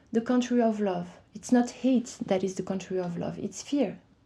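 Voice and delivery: ordinary talk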